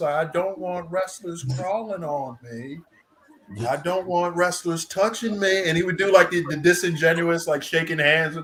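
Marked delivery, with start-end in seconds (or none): 0.1-5.7 put-on Southern drawl. Imitating a Waylon Mercy promo line: Waylon Mercy Southern drawl. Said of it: "the Southern drawl and everything".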